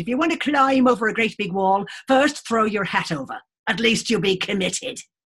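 rough, shaky, poor put-on Irish accent. Telling an Irish adage, the speaker does a poor imitation of Sheila's Irish accent. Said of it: "I'm going to do a very poor version of your lovely Irish accent".

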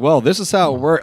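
acted-out patronising, condescending, lecturing, talking-down tone. Retelling the manager's answer to a question: imitating a condescending reply. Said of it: "he started getting, like, a little condescending".

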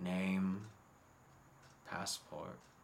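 very quiet, rough, gruff, near-flat monotone. Narrating a checkpoint scene, voicing the figure who stops the players: gruff, almost monotone voice. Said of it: "in a very gruff, almost monotone voice".

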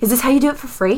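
acted enthusiastic, eager excitement. Speaker narrating a train encounter, voicing a woman's question, retelling it enthusiastically. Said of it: "She asks very enthusiastically".

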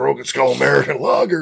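rough, creaky, high voice. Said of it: "You gotta do it in his voice".

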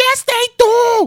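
slow, high-pitched yelling. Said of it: "Conchi yells out".

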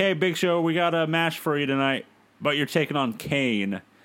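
ordinary talk, nothing marked

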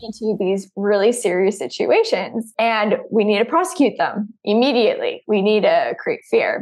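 ordinary talk

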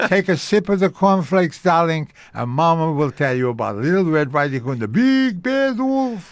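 Yiddish-inflected speech.

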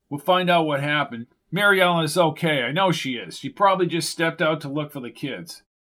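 plain reading voice

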